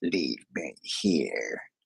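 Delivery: very low, very deep, angry demonic otherworldly voice. Retelling what came out of the woman's mouth: imitating an angry demonic voice. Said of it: "in a very demonic voice".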